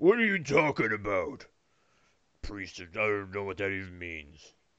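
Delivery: very hushed, quiet, big, deep voice. A game narrator voices a figure heard from inside, in a great deep voice. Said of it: "a great deep voice goes".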